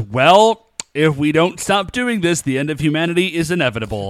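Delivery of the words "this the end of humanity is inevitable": ordinary talk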